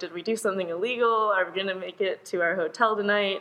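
plain

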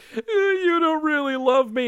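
very high, put-on crying voice. Describing a cartoon voice actor's delivery: imitating d w's crying affectation. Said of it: "that affectation that the voice actor does".

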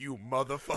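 mad, fed-up, furious muttered delivery. Retelling a reaction while watching a scene: imitating own angry reaction. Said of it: "I was so mad".

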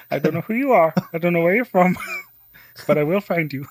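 high-pitched cartoon frog puppet voice. Showing how the other speaker should have asked it, in Kermit the Frog voice. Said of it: "in like the Kermit the Frog voice from Family Guy".

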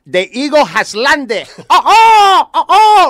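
mock comic Cuban accent. Retelling how the chef announced the cocaine over the microphone: imitating the chef's funny Cuban accent. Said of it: "he had a funny accent".

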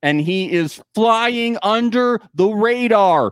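underlined, bolded, all-caps, double-exclamation emphatic delivery. Adding a further suspicious remark for listeners, extra emphatic with two exclamation points. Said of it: "2 exclamation points".

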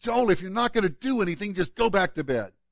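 exasperated, fed-up voice. Retelling what was said in frustration: retelling frustrated words. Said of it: "I finally in frustration looked at Joel".

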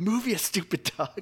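mock screaming and yelling. Retelling a game moment, reenacting screaming at the TV at the dog. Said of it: "I'm like screaming at my TV".

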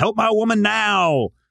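very high, stretched-out screech. Asking which character it was, imitating a scream. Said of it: "is he the one that screams".

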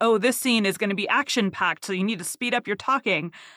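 usual speaking voice

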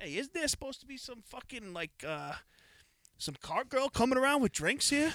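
very high-pitched comic character voice. Retelling a comedy sketch with the golfer at the range: Pasquale voice. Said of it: "Nicky Cass's character, Pasquale".

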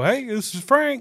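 very high, loud, slow, drawn-out voice. Describing calling the sponsor's phone number, imitating Frank. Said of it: "I don't think he sounds like that".

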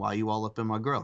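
ordinary talk

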